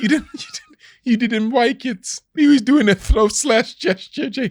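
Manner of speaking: teasing, sing-song, mocking baby voice. Taunting someone who didn't like it, trying to sound like a baby. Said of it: "I'm trying to sound like a baby".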